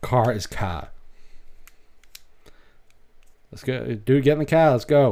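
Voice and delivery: Maine accent, "car" said without the r. Showing how to do a Maine accent properly, in a Maine accent. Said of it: "if you're going to do a Maine accent".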